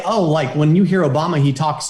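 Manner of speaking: ordinary delivery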